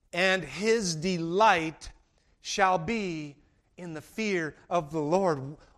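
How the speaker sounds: slow, unhurried, careful, deliberate reading. Rereading a Bible verse aloud to listeners, the speaker reads it a little slower. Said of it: "Let's read that a little slower".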